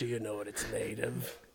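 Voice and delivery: deep, backwoods swamp man character voice. Acting out people eating roadkill in a skit: swamp man voice. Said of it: "a swamp man voice".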